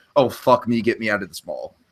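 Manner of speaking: put-on, fed-up, completely done-with-everything tone. Describing a shopping montage's ending, imitating Jimmy fed up. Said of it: "he's had it".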